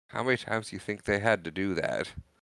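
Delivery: ordinary talk, nothing marked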